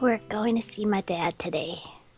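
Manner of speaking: speaking low. Reading a character's line after she takes a deep breath: low voice. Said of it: "says in a low voice".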